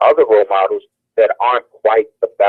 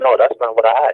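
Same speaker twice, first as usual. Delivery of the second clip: ordinary delivery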